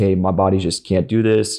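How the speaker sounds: normal talking voice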